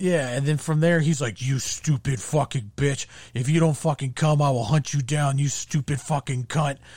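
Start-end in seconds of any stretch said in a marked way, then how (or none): 1.4-6.7 put-on raging, abusive outburst. Retelling a man's abusive outburst at a hesitant woman: imitating someone going off. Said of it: "just you goes off".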